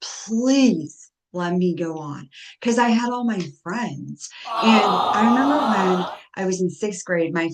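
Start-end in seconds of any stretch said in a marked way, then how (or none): 0.0-2.3 mock begging, very slow and stretched out. Retelling begging parents to keep going to school: retelling own begging. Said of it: "begged my parents".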